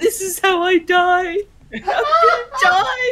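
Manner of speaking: breathless laughter, laughing so hard breath runs out. Cracking up too hard to breathe, laughing, can't breathe. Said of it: "I can't breathe".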